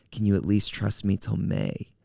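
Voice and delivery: plain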